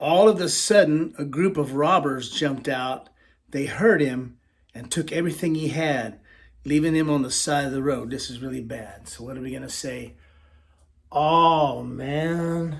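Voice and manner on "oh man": downcast, mournful, sorrowful tone. Telling a story, giving the sad response at a bad part: sad "oh man". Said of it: "See how I look sad?".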